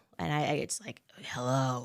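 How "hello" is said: low, deep growling voice. Retelling how the caller first answered the phone: growling Harvey Weinstein voice. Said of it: "Harvey Weinstein's voice is like a growl".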